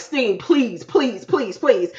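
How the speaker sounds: beseeching, begging, pleading voice. Retelling a show scene where a man begs Steen: imitating someone begging. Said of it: "he's begging her".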